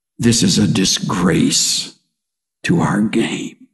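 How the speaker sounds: deep, low, slow, deliberate aside. Retelling an announcer's remark during a brawl: imitating Bill Walton muttering under his breath. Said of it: "almost under his breath in an unguarded moment".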